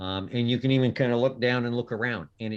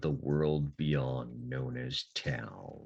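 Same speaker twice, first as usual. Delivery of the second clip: creepy delivery, lower, quieter and slower; 11 semitones lower, 7 dB quieter than usual. Wrapping up the morning, the narrator announces the next place in a creepy manner. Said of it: "I'm only saying it in a creepy manner".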